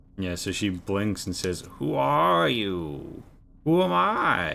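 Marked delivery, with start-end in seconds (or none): 1.8-4.5 put-on dazed, bewildered old woman's creaky croak, very slow. Voicing a hag meeting a stranger: bewildered hag. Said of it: "she seems quite bewildered".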